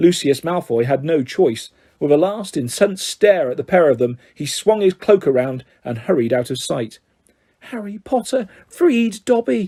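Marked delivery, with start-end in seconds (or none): 7.6-9.7 shrill, high-pitched elf voice. Narrator reading, the freed elf gazes up at Harry, shrill Dobby voice. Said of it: "said the elf shrilly".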